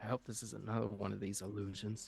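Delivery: said quietly. A player's character leans over to a companion and says a quiet aside. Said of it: "kind of quietly say to Zareth".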